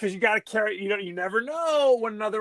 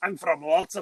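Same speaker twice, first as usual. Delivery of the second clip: put-on Scottish accent, lower pitch; 4 semitones lower than usual. Retelling a character's answer when asked where he is from, Scottish accent. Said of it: "you're giving him a Scottish accent".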